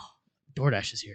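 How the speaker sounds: mock, imitated excited exclamation. Retelling a friend's reaction when the food delivery arrived: imitating an excited exclamation. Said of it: "You were so excited once it showed up".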